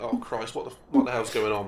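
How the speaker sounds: ordinary talk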